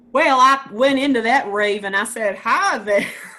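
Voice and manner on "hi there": put-on Southern US accent, South Carolina style. Retelling entering a rave after a request: South Carolina accent. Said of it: "you had to use your South Carolina accent".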